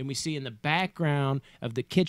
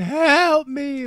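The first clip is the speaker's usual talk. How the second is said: play-acted very high, shrill, loud, sobbing tearful cry; 13 semitones higher, 10 dB louder than usual. Retelling a character's plea in a movie: imitating tearful plea for help. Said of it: "she's got tears coming out of her eyes".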